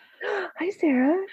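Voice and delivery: very high customer-service phone voice. Greeting another speaker on the call in a retail phone voice. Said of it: "Retail voice returned".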